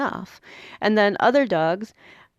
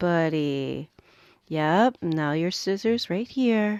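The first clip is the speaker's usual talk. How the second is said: slow, quiet, relaxed, soothing murmur; 2 semitones lower than usual. Speaker acts out how they talk when someone needs to stay still: much slower, quiet voice. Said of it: "suddenly I'm much slower and a big deep breath and a quiet voice".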